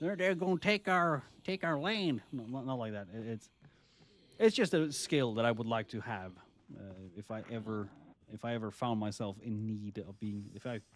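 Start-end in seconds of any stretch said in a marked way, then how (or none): 0.0-2.2 loud, high-pitched put-on Texan accent. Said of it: "Sorry if I did a Mexican, Te-, Texan accent".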